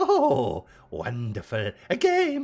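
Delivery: high, loud, cackling, gleeful villain voice.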